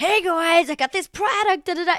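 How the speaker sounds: bouncy, high, manic, bubbly online-creator hype voice. Imitating Michaela presenting a product online: Michaela's manic bubbly voice. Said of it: "manic and exciting and stuff like that online".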